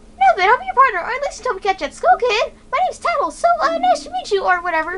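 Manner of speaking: put-on very high teenage girl voice, girlish and shy. Voicing a character offering to be a kid's partner; Tattle voice, teenage girl. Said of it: "How come I sound like a teenage girl".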